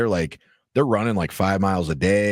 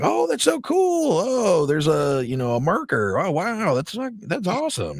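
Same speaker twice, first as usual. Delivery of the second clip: put-on gushing excitement, very high, very slow, drawn out; 11 semitones higher than usual. Explaining how you have to act interested in everything, with fake excitement. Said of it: "like you just have to act excited about everything".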